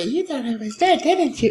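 put-on eerie, creepy, sweet little-kid voice. Describing how the line should sound: creepy sweet child voice. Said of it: "it's a really like creepy, yeah, like sweet child voice".

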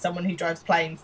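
normal talking voice

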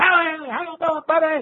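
unusual, very high, excited sports-radio voice. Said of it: "one of the most unusual deliveries and voices".

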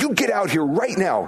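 high, angry, indignant scolding tone. Contrasting God's search with how people call someone over, mock-angry scolding. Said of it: "angry and indignant".

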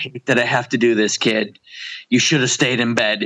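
put-on sad, sorrowful, regretful tone. Quoting a character's line to show how he delivers it, imitating sad regret. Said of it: "filled with just sad regret at what he has to do".

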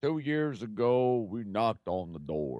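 put-on old coach voice. Retelling a coach's pep rally speech: Bum Phillips impression. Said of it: "a terrible impression of somebody".

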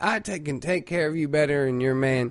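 usual speaking voice

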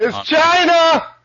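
shrill, very loud, high-pitched yell. Calling out across the house during a recording: yelling. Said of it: "Stop yelling".

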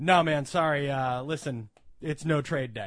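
put-on expressionless, flat deadpan. Retelling his answer to a man who came in to trade items, retelling a deadpan reply. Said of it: "totally deadpan".

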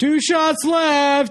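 high, slow, taunting yell.

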